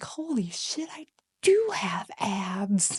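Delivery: slow, soft, whispered hush full of awe.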